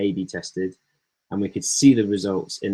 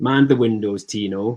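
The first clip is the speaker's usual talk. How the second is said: put-on loud, awful Lancashire accent. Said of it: "excuse my awful Lancashire accent".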